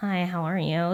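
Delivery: uninviting, unapproachable, unwelcoming tone. Showing a greeting said so people won't talk: unwelcoming greeting tone. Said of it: "if your tone, if it's a".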